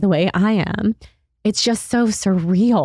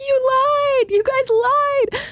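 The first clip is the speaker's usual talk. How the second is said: mock shrill scream, very high and drawn-out. Retelling a friend's reaction to the pregnancy news: imitating someone screaming. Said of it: "she was just screaming at the top of her lungs".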